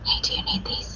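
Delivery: very soft, very quiet, hushed, secretive whisper. A tabletop game player speaking in character, whispering to Galleon. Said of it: "I'm gonna whisper to Galleon".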